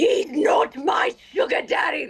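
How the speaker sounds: very slow, aggressive, high-pitched, drawn-out shouting. Recalling a favorite dubbed line, aggressive Stella yelling. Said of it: "because of the aggressive Stella yelling".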